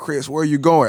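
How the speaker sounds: acted, all-out, high, loud screaming. Chasing a guy named Chris, the speaker retells screaming after him. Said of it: "I'm like screaming".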